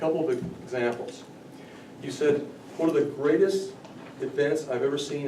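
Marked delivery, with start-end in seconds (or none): none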